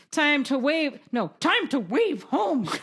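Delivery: talking in a dog voice. Trying out a line spoken by Shepard, a dog, in a dog voice. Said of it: "that was my dog voice".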